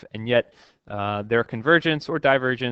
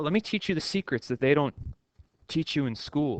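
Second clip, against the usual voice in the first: soft, hushed, online guru ad sales pitch voice; 4 semitones higher, 5 dB quieter than usual. Joking about sounding like online gurus, YouTube commercial guru voice. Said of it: "I sound like one of those gurus on on YouTube commercials".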